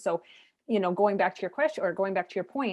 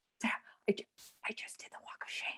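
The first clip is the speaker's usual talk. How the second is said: put-on hushed whisper, much quieter; 2 semitones higher, 12 dB quieter than usual. Sarah retells a woman's morning phone call to her, imitating someone whispering. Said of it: "she calls me one morning and she's whispering".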